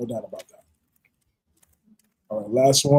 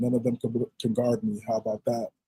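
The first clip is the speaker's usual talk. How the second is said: ordinary talk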